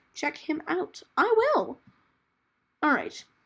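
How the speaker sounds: voice jumping up high, high-pitched and quick. Speaker recommending another person's videos, high-pitched voice. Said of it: "my voice got so high pitched there".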